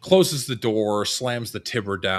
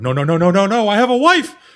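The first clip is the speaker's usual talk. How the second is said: very high, very loud, rising, pleading scream; 12 semitones higher, 10 dB louder than usual. Voicing a man thrown against a building at night: screaming man. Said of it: "this man just screaming out".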